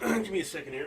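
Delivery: choked words through a catching throat. Pausing mid-discussion to ask for a moment: choking, clearing throat. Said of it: "'cause I am kinda choking".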